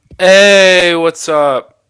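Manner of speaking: very loud, high, booming voice. Joining as a guest, greeting the other speaker: a little loud. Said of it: "was I a little loud there?".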